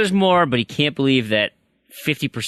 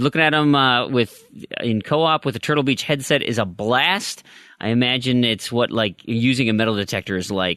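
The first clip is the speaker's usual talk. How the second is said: normal talking voice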